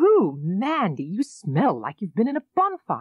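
startled, aghast, shocked outburst. At bedtime, Sue turns to Mandy and speaks in a shocked voice. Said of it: "said in a shocked voice".

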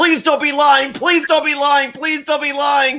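high, loud, pleading, begging scream. Retelling watching tv, re-enacting screaming at the tv. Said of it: "I'm screaming to the TV".

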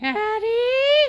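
voice cracking. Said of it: "Your voice cracked again!".

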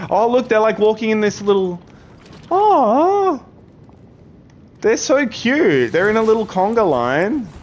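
high, loud, gushing coo.

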